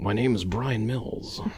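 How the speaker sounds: odd, forced, put-on American accent. Doing Liam Neeson trying an American accent: Liam Neeson's odd American accent. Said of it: "I sound like Liam Neeson. ... when he's trying to do an American accent".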